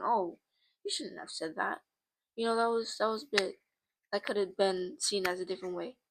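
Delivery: ordinary delivery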